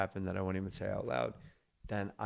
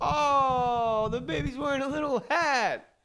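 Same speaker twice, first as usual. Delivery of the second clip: very high, loud, cooing character voice. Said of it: "I'm like".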